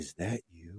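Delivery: acted-out, utterly deadpan, very low, very soft delivery. Retelling what an older customer asked at the check stand: imitating a deadpan question. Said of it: "with the straightest of faces just goes".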